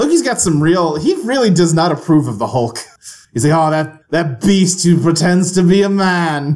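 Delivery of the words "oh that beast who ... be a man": haughty, contemptuous, slow, lofty villain voice. Describing how Loki regards the Hulk, doing a Loki impression. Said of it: "That's my Loki impression".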